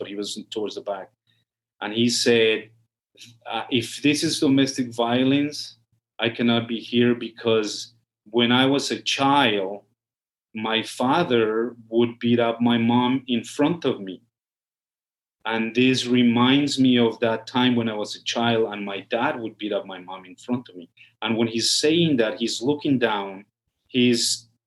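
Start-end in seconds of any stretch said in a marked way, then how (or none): none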